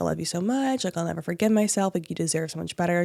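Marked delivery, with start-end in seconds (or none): none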